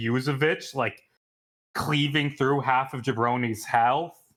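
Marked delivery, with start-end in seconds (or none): none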